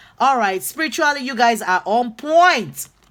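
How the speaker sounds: overexcited, loud shouting yell. The speaker reads out the group's spiritual alignment to them, yelling. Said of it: "I didn't mean to yell".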